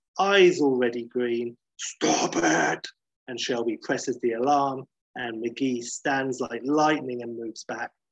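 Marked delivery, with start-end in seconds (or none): 1.8-2.9 very deep, mild yell. Retelling a scene where the major and guards burst in, in David Banner's deep scream. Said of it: "screaming, deep voice".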